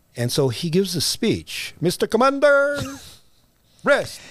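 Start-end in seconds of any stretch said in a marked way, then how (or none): 1.8-4.2 put-on Filipino accent, voice pitched way up. Retelling a speech given at a meeting, imitating a Filipino accent. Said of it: "That's the accent?".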